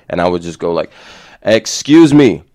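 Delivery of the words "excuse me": loud, powerful, forceful projected voice. Describing taking a breath before speaking in social situations, showing a powerful voice. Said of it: "my voice would just come out more powerful".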